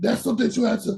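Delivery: voice cracking. Answering the other speaker in conversation, voice cracking. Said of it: "sorry, my voice".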